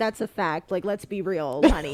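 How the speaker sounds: very direct, blunt, no-nonsense tone. Retelling how a teacher spoke: imitating a very direct teacher. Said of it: "very direct".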